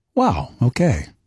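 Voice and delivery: warm, encouraging, supportive tone. Asked to say a short phrase in a supportive way to a listener, supportive. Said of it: "can you say it in a supportive way".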